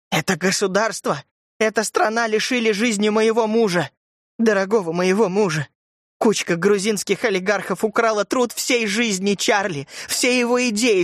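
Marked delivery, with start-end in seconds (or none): none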